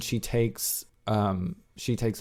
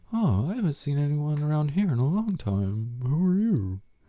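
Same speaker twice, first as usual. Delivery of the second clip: high, put-on elderly woman voice; 5 semitones higher than usual. Recapping a show, the speaker voices an old woman questioning a stranger: old woman voice. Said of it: "That's how she sounds".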